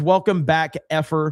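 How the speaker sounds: plain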